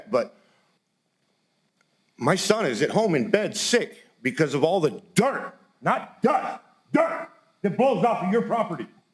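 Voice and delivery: distressed, emotional, audibly upset tone. Addressing the commission and a property owner, upset. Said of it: "I'm sorry that I seem so upset".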